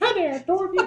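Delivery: very high, squeaky, deliberately poor character voice. Thinking of a puppet saying Dorothy: poor Elmo impression. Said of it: "That's my poor Elmo impression".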